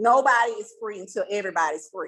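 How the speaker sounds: plain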